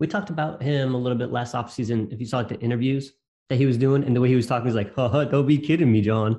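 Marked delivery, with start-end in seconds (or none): 5.0-6.4 slow, drawn-out, fake car-salesman patter. Discussing a quarterback's interviews, the speaker does a Jameis Winston impression. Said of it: "like fake car salesman type".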